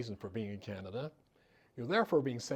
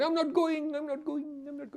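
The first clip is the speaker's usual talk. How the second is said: very high-pitched, shrill, desperate, repeated shout; 5 dB louder than usual. Retelling a man dragged away by guards: imitating someone shouting. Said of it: "And he shouted".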